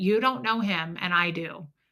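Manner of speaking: ordinary talk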